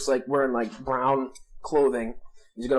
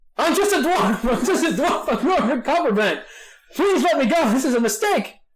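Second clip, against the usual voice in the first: very high, loud, blubbering, sobbing babble; 13 semitones higher, 5 dB louder than usual. Captured dwarf accused of being a spy in a game scene, babbling and crying. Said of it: "he starts like babbling and like crying".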